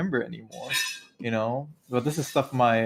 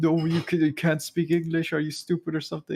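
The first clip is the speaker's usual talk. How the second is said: dumb, belittling mock German accent, pitched up; 5 semitones higher than usual. Imitating an english teacher mocking them in front of the class, dumb german accent. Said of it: "this dumb German accent".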